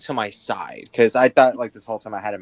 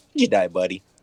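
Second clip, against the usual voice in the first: mocking, sarcastic, jabbing tone; 4 semitones lower than usual. Speaking in character to a companion about a dead man: sarcastic. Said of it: "I'm going to sarcastically look to my side and go".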